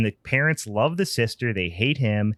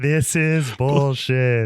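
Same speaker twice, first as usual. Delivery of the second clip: put-on ghostly whisper voice, higher; 3 semitones higher, 4 dB louder than usual. Retelling what the ghouls at the booth say: imitating a ghosty whisper voice. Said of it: "ghosty whisper voice".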